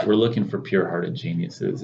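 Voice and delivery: ordinary talk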